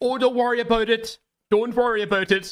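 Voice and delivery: put-on very high-pitched, poorly done Canadian accent. Imitating a streamer comforting Mizkif: bad Canadian accent. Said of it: "I can't do a fucking Canadian accent".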